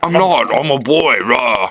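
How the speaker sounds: very slow, aggressive, mean put-on tough voice. Retelling a film scene where Spider-Man interrogates someone, imitating Spider-Man's deep aggressive voice. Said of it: "a really deep, aggressive voice".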